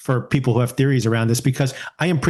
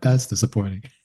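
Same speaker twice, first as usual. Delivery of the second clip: mock-understated delivery at a lower pitch; 3 semitones lower, 3 dB quieter than usual. Recounting what someone said in an exchange, repeating an understated remark. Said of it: "So understated".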